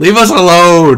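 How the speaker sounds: high, loud, full shout. Voicing a creature on a bridge calling out to the party: yelling. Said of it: "he's yelling out to you in common".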